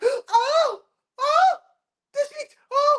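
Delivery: put-on very high, very slow panicked gasps. Imitating someone about to pass out when voices are raised: imitating panicked gasping. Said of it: "They be about to pass out".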